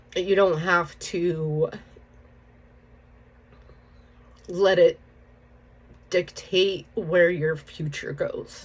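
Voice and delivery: speaking through tears. Opening up about something long dealt with, crying while talking. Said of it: "I didn't think I would cry this soon".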